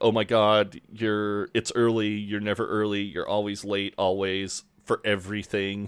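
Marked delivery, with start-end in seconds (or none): none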